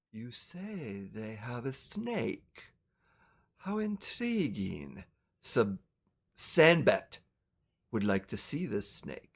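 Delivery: icy calm, chilling, very low and hushed voice. Voicing the boss heard from the other room, in a calm, chilling voice. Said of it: "this calm, very chilling voice".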